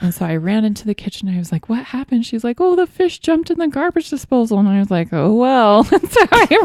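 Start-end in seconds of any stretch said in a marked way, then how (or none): 2.6-4.6 mock very high, frantic, panicked yelling. Retelling her reaction in the kitchen: imitating someone yelling in panic. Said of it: "she was freaking out. She was yelling".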